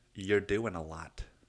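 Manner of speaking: ordinary delivery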